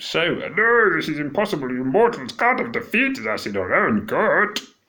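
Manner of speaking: high, swooping, goofy, sing-song puppet voice. Reading a character's lines aloud the first time through: silly Muppet voice. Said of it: "in kind of like a Muppety voice, like I did first time".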